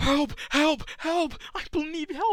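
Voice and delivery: very high, very loud sobbing with panicked cries. Acting out a little girl begging adults for help: imitating a crying, panicking girl. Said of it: "actually crying and, like, visibly panicking".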